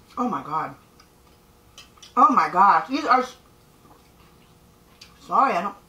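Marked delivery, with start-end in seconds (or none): 0.2-3.4 speaking with mouth full. Tasting the food just made, talking with mouth full. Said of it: "I don't usually talk with my mouth full".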